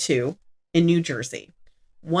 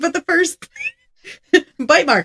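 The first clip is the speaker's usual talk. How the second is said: words broken by laughter throughout; 11 semitones higher, 5 dB louder than usual. Recounting a crime case about a bite mark, laughing while talking. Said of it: "I'm sorry I'm laughing".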